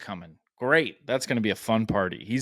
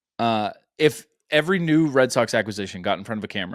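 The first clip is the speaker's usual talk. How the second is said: normal talking voice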